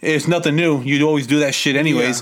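normal talking voice

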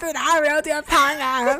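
high, loud, shouted, hyped-up host voice.

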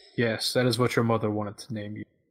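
normal talking voice

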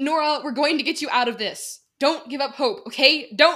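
loud, high shout, calling out. A woman being led away calls across the room to a fellow prisoner; shouted across the room. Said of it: "she shouted across the room".

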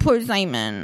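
low, slow, drawn-out mocking drawl.

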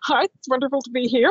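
put-on American accent. Playing the new head of sales and marketing, saying hello in an American accent. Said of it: "I would be American".

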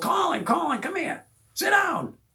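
put-on shrill, very high calling yell. Retelling calling a son over to watch a movie: imitating own yell. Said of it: "I yelled".

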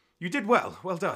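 acted breathless voice. After a duel, the speaker retells Fabian's praise, imitating Fabian slightly out of breath. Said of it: "you see kind of like he's breathing a bit".

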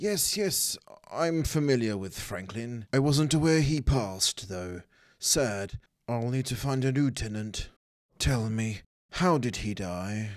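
polished, well-spoken voice. A game master voicing a half-orc landlord questioned by investigators, well spoken. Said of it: "He's a half-orc. Half human, quite greyish skin, he's well dressed, very well spoken, his hair slicked back, he's got pointy ears, and his orc teeth are quite big and sharp and are a prominent feature in his lower jaw".

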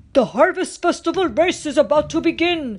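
big booming voice. Narrator reads the chief announcing the festival race, Chief Powhatan's big, booming voice. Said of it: "in his big, booming voice".

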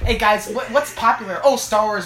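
ordinary talk

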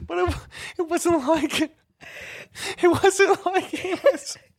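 high, loud, helpless laughter through the words. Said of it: "Compose yourself".

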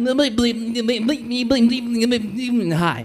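high, heavy stammering stutter before "hi". Retelling greeting a cute girl as a kid: stuttering like Porky Pig. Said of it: "I was like Porky Pig".

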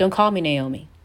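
imitated sharp, cutting tone. Acting out naomi telling the people what to call her: imitating a sharp tone. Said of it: "just that sharp tone".

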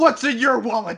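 sudden, blurted-out shout. Retelling what the player dressed as Morpheus said: imitating a shout. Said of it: "and he just shouts".

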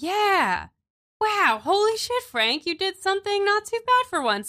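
very high, rowdy, excited, awestruck goblin voices. Voicing awestruck goblins praising Frank in a role-play game: excited goblin voice. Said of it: "they're goblins, you know, they're very excited".

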